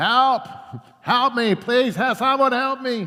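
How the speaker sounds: put-on high, loud, pleading crying out. Telling a joke about a man hanging off a cliff, acting out crying for help. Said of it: "he's crying out for help".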